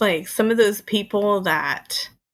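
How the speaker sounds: normal talking voice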